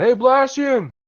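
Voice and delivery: very high, loud screamed, hollered delivery. Greeting a character by screaming out his name: screaming a greeting. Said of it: "I'll scream out".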